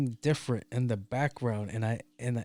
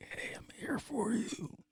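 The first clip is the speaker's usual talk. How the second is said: spooky, breathy whisper close to the ear; 10 semitones higher, 9 dB quieter than usual. Recalling someone whispering into his ear, Grim Reaper whisper. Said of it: "That's like the Grim Reaper".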